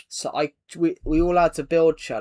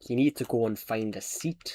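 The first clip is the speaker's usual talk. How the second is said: put-on Scottish-accented voice; 5 semitones lower, 6 dB quieter than usual. Retelling a bus driver's words after a request: scottish accent. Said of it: "Scottish accent, please".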